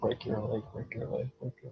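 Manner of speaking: very hushed, fast, whispered mutter. Voicing a character muttering about another character: muttered under the breath. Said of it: "you hear muttered under his breath".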